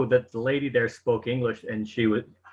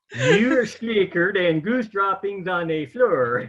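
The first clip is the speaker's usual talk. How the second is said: pitched-up put-on fake Swedish accent; 7 semitones higher than usual. Asked to say it in Swedish, Swedish Chef impression. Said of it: "why is the Swedish chef from the Muppets somehow coming around".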